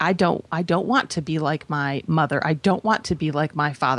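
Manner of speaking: normal talking voice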